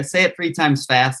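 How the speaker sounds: ordinary delivery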